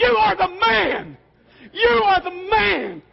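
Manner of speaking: very high, rough, delirious hollering. Retelling yelling into the ear of the man carrying the speaker piggyback, retelling a yell. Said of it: "in his ear I'm yelling".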